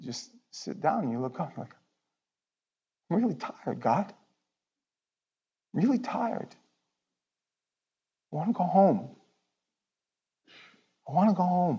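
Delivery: emotional, choked-up voice. Describing sitting down and telling God you're tired: getting emotional. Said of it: "I'm gonna get emotional".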